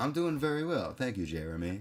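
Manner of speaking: stiff, mechanical, robot-like delivery. Podcast host answers his co-host's greeting at the show's start, stiff robotic delivery. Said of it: "Are we going to do the whole show like robots?".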